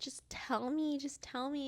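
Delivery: put-on holding back tears. Retelling a tense family moment, acting out a mother pleading for the truth while holding back tears. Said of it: "bawling my eyes, crying".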